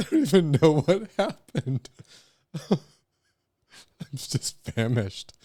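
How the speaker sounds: talking right after choking. Speaker to listeners, right after choking on water, recovering from choking. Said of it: "I am choking on my water there".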